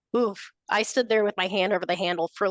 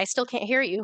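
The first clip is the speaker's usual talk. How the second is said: annoyed tone, higher; 3 semitones higher than usual. Retelling calling up to mom from the basement: imitating own annoyed reply. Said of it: "I got kind of annoyed".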